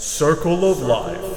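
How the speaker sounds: very loud, thundering, godlike booming voice. Explaining circular bow motion, then saying it in a God voice. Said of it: "Let's get some God voice in here".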